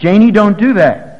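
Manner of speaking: loud, slow, commanding delivery.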